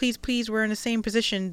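ordinary delivery

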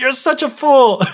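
very high, outraged, freaked-out scolding tone. Retelling a fairy tale, acting out Jack's mother: imitating a mother freaking out. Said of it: "She freaks out".

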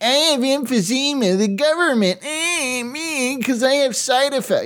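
very high, whiny, grumbling, complaining voice. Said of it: "I'm not like [name], like".

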